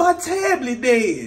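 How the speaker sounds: mock tearful blubbering, boo-hoo sobbing wail. Retelling what a crying daughter said: imitating daughter boo-hoo crying. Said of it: "You in here boo-hoo crying".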